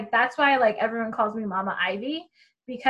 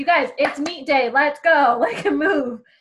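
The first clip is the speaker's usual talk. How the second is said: mock barking voice, higher pitch, louder; 4 semitones higher, 6 dB louder than usual. Retelling urging lounging athletes to get moving, retelling barked orders. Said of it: "Show me your war face".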